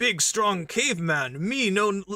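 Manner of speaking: big, dumb-sounding caveman voice, broken grammar. Mocking how aliens get written to talk, in a big strong caveman voice. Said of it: "they do like alien voices where they turn them into like me".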